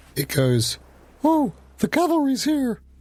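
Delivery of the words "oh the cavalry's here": very high, tiny small-creature voice. Game master voicing a little voice the players hear: small little voice. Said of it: "you do hear a little voice".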